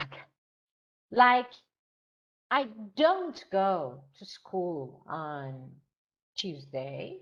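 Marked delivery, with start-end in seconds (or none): 2.5-7.2 strong stress on don't, rest even. Explaining stress on negative auxiliary verbs: stress on don't. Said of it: "sometimes you put stress on negative auxiliary verb".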